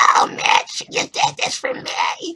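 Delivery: dragged-out, annoying, grating voice. Retelling a cartoon episode, quoting Starla: annoying Starla voice. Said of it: "I hate Starla's voice. She's like".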